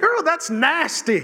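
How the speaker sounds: offhand delivery. Asking the women present about a girlfriend's reaction: imitating a girlfriend. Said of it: "have you ever had a girlfriend say".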